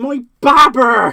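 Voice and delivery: put-on very loud Bristol accent, belted out. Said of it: "an officer that actually is from Bristol".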